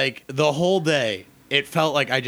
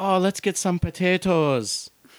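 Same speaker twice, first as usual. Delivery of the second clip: bad fake Irish lilt, pitched up, drifting off; 5 semitones higher than usual. Joking with co-hosts about accents that drift, doing a bad Irish accent. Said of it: "It's like Irish, and then it just is Russian".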